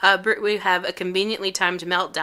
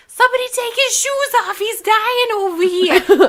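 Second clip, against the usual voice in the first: very high, shrill, loud New York yell; 8 dB louder than usual. Retelling a woman calling for help for a man with chest pains, imitating a New York woman yelling. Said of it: "she's like yells".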